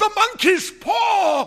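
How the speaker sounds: very high, very loud, wild, shrill cry, "paw" drawn out. A wife suddenly wakes her sleeping husband, crying out wildly. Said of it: "she cried wildly".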